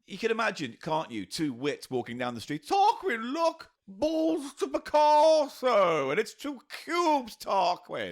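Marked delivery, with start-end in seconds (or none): 2.6-8.1 upper-crust twit voice, very high, very slow. Acting out two wits walking down the street: posh character voice. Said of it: "naming of a posh character".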